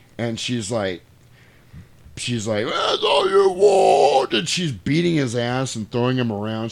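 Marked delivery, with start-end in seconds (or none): 2.7-4.3 very high, rough, creaky, swooping man-like possessed rasp. Retelling a scene where a possessed woman yells at a priest: imitating a man-like possessed voice. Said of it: "it becomes like a man's voice".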